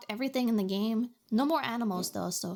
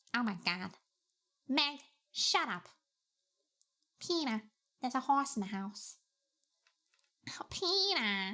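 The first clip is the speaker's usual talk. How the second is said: put-on New York-ish accent, quieter; 4 dB quieter than usual. Speaker showing off a cartoon mom impression: Lois impression, New Yorkish accent. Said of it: "She's got that weird kind of like New Yorkish".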